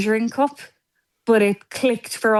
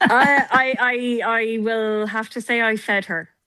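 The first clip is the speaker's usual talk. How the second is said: guarded, cagey, very slow, halting delivery. Answering a joking question about feeding the child: cagey. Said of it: "the way you said that, you're a bit cagey".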